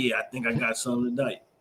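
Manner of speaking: self-assured, boastful bragging tone. Retelling a friend's signature move at a bar: imitating a friend bragging. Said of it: "be like".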